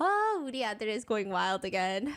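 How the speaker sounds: ordinary delivery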